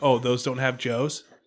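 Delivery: mean, sarcastic, mocking tone. Speaker retelling what they said to a woman, as a sarcastic question. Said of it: "it's sarcasm too".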